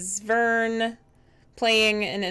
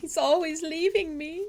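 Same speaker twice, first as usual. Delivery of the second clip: very high-pitched, sobbing, tearful banshee voice; 9 semitones higher than usual. Voicing a banshee answering why she is crying: banshee crying. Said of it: "Why are you crying?".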